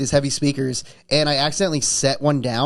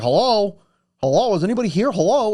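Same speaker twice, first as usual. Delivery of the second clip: acted, pitched-up calling out; 5 semitones higher than usual. Retelling someone walking in unannounced: imitating someone calling out hello. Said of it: "He's like".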